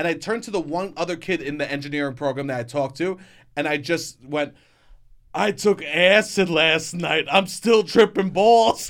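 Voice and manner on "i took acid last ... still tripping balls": loud, pitched-up blurted yell, dragged out. Retelling blurting something out to a classmate in the hallway: retelling a scream. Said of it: "You just screamed that".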